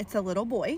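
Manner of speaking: ordinary delivery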